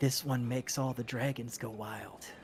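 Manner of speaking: confiding, hushed half-whisper, close up. Voicing a seller who leans in close to a customer: half-whispering in your ear. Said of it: "leans into you and whispers in your ear".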